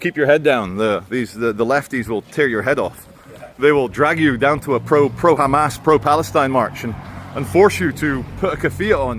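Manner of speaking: normal talking voice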